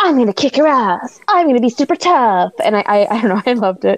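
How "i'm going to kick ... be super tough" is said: high, tough badass bravado tough-talk voice. Describing an actress's character who always talked tough, imitating a badass tough voice. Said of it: "she always had like that badass bitch voice".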